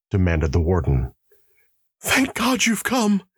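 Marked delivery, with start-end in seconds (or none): 2.0-3.2 sharp cry, very high, exclaiming. A prisoner greets the warden who has come up to his cell; exclaiming. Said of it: "exclaimed the prisoner".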